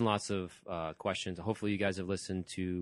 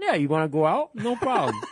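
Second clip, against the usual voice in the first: shrill, booming, swooping, confident voice, belted high; 13 semitones higher, 10 dB louder than usual. Retelling a TV scene, imitating George Costanza eating an apple. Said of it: "he starts talking to women like this".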